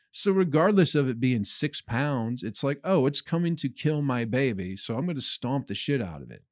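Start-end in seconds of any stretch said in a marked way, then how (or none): none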